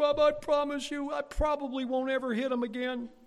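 high, loud, crying, tearful pleading voice. Retelling what the speaker's mother said as they cried together, imitating her crying. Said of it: "We would just slobber over each other".

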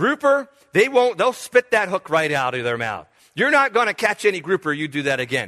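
normal talking voice

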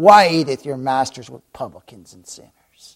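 mock loud, scornful, hate-filled disdain. Speaker retelling the Pharisees' question to His disciples, mock disdain. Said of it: "I imagine they said it with disdain, they just said it with hatred".

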